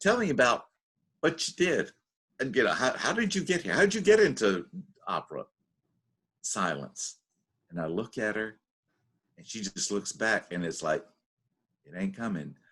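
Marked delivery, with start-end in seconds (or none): 0.0-5.4 put-on polished British accent, best-effort attempt. Speaker retells questioning a woman on a bench, in best British accent. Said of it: "in my best British accent".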